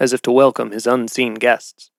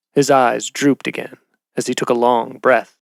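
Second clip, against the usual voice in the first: plain reading voice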